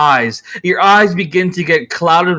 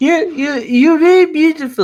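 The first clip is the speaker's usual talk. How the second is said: put-on very high, lisping old-woman voice; 11 semitones higher than usual. Play a woman with her hand on his shoulder, in an old lady with retainer teeth voice. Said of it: "she sounds like an old lady with like a retainer teeth".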